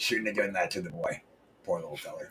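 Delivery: very deep, very soft, hushed muttered voice. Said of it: "[name]'s doing the Sling Blade voice".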